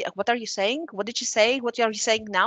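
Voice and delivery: ordinary talk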